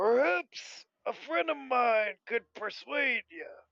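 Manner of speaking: obnoxiously loud voice. A player's character speaks in the tavern, hoping a companion overhears; obnoxiously loud voice. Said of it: "in a bit of an obnoxiously loud tone of voice".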